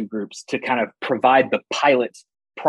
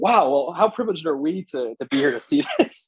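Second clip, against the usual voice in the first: obvious sarcastic marvelling, swooping and pitched up; 5 semitones higher than usual. Recounting a reply to a local leader after a big attack; retelling own sarcastic remark. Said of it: "obviously sarcastically".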